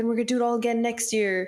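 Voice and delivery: high, hollow, play-acted, insincere fake cheer. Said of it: "it seems so fake".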